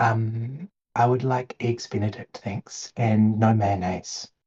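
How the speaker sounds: soft, hushed, secretive half-whisper. Acting out ordering from a waiter at a restaurant, half-whispering. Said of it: "you just like whisper in the air".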